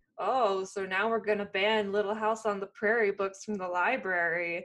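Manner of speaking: put-on sarcastic tone. Recalling what someone once said, in a mock-sarcastic quote. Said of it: "someone sarcastically saying like".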